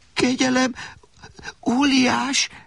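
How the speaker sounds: shaky, quavering voice. Narrator voicing a captive addressing a giant, trembling voice. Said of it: "tette hozzá remegő hangon Alexander".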